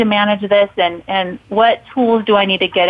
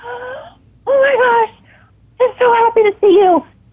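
mock very high-pitched, drawn-out gasping voice; 14 semitones higher than usual. Retelling how an acquaintance reacted on meeting at a gas station: imitating someone gasping. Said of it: "she gasps and she's like".

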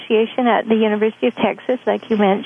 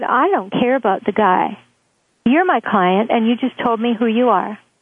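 ordinary talk

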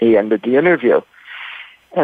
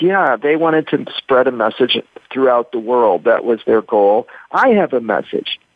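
ordinary talk, nothing marked

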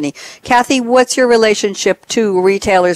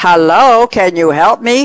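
polite, courteous raised call; 4 dB louder than usual. In a store, the speaker retells calling to someone in the shoe department: retelling a polite yell. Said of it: "I yelled in my most polite yell".

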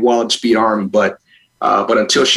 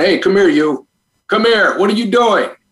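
much higher, barking drill instructor voice; 8 semitones higher than usual. Showing how you call your son, using your Marine drill instructor voice. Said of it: "a drill instructor's Marine Corps oorah".

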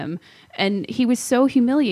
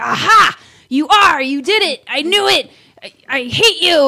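very slow, loud, drawn-out, accusing berating; 8 semitones higher, 7 dB louder than usual. Speaker retelling confronting a man caught cheating, retelling berating someone. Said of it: "I just like berated him".

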